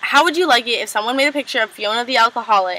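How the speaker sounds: ordinary talk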